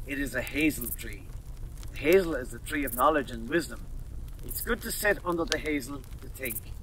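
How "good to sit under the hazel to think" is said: ordinary delivery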